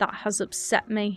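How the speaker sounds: put-on British accent. Rereading a chat message aloud after it sounded british: put-on british accent. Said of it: "That sounded so British in my head".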